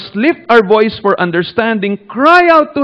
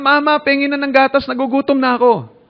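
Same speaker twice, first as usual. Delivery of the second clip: put-on baby crying, higher pitch; 5 semitones higher, 3 dB quieter than usual. Explaining a verse, the speaker acts out a baby, imitating a crying baby. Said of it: "Parang isang baby na umiiyak".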